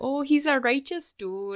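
over-the-top, laid-on, exaggerated Chicago accent. Describing how she talks in the role, imitating Grace's Chicago accent. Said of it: "so they do kind of talk like that".

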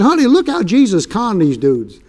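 put-on thrilled, eager delivery with swooping pitch. Retelling telling his wife a bible discovery: retelling own excited words. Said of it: "I was so excited".

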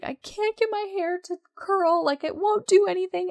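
very high, panicked, gasping, hyperventilating voice. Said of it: "also hyperventilating at this point".

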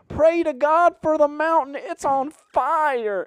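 very high, loud, slow Tennessee drawl, stretched ending. Retelling a woman in a grocery store, the speaker imitates her: tennessee accent. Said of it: "She sounded like she was straight out of Tennessee".

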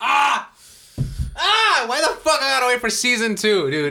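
loud, high-pitched, shrill furious yelling. Complaining about waiting for the next season: loud angry yelling. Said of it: "you just messed some people's ears up right now".

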